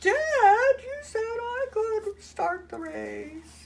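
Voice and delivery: very high, snippy, whiny cartoon voice, stretched "you". Quoting the son character from a cartoon, bitchy Little People voice. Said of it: "my kind of bitchy voice".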